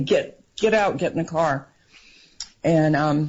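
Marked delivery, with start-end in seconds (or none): none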